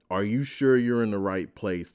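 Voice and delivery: normal talking voice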